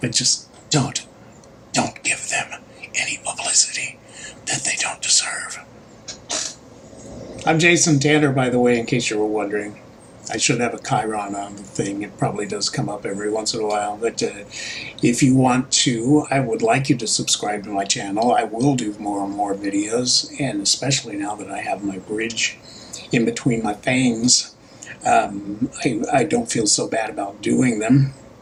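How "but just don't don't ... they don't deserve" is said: soft whisper spoken close into the microphone. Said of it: "I'm gonna whisper into my mic like Joe Biden does".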